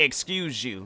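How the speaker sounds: mock, snotty tone full of attitude. Retelling a girl who shoved past in the lunchroom: imitating a snotty "excuse you". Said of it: "with an attitude".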